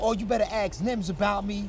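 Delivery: ordinary talk, nothing marked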